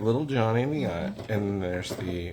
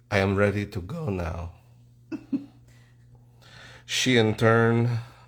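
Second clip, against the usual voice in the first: put-on French accent. Narrating a made-up fish documentary: Jacques Cousteau accent. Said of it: "doing Jacques Cousteau".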